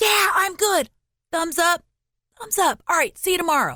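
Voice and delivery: imitated whisper yell. Retelling a late-night hallway exchange at twelve thirty: imitating a whisper yell. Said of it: "kinda whisper yelling".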